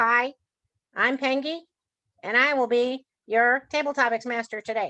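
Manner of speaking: silly, funny, made-up hand-puppet voice. Showing how a hand puppet meeting works, in a funny Pengy puppet voice. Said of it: "you can create a funny voice".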